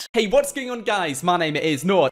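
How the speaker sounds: ridiculous, over-the-top, warped text-to-speech voice. Greeting viewers at the start of a video: ridiculously over-the-top intro voice. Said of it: "puts on this really annoying and ridiculously over-the-top voice".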